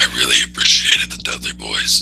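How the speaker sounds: very low, put-on demon voice. Announcing the rest of the show will be done this way, in a devil voice. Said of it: "the only way you can say you really appreciate the Dudley Boys is with a devil voice".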